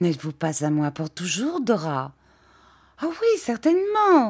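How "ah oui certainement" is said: very high, ringing cry. Dora answers a question put to her, crying out. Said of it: "cria Dora".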